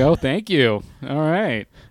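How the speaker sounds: half-sarcastic edge with swooping pitch. Retelling a reply to a guest who called the wine adequate: retelling a half sarcastic thanks. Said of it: "a half sarcastic "thank you."".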